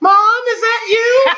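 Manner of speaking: put-on tiny, very high little girl's child voice. Retelling a walkie-talkie scare, the speaker imitates a little girl's voice. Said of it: "we hear this little girl's voice go".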